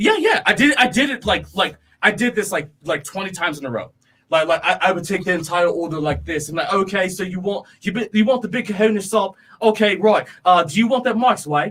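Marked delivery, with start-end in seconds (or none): 6.7-11.7 put-on English accent. Retelling taking a customer's whole order, in a put-on English accent. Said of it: "start talking with an English accent".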